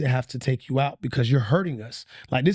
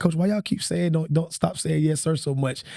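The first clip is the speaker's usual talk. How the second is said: ordinary talk, nothing marked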